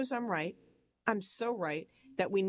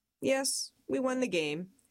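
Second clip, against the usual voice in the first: acted very calm, cool delivery, pitched up; 6 semitones higher than usual. Retelling an argument over a card game, imitating a brother's reply: imitating a calm voice. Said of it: "He said it so dang calm".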